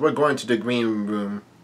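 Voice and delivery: ordinary talk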